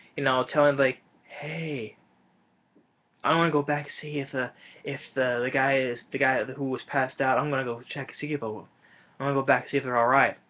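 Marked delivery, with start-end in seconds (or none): 1.3-10.4 put-on whisper, much quieter. Quoting a woman who suddenly started whispering to them, retelling a whisper. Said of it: "she just starts whispering".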